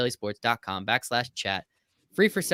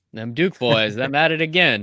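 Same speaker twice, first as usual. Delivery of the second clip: loud put-on good old boy Southern drawl; 2 semitones higher, 8 dB louder than usual. Imitating a European man who sounds Southern: Southern good old boy drawl. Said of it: "he sounds like a good old boy from the south".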